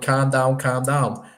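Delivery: put-on Scouse accent. Recall a comedy skit for the other speaker with a Harry Enfield's Scousers impression. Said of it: "he's had the Scousers going".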